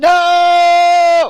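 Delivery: long, very loud, shrill, high drawn-out yell. Demonstrating a loud boundary-setting no, shouted 'No!'. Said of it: "Warning, warning, I'm going to get really loud".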